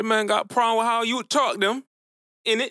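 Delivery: fake British accent. Teasing a friend who objects to the accent: put-on UK accent.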